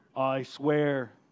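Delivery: big, deep, low voice. Speaker imagining how God makes a promise; big voice of God. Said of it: "the big voice of God".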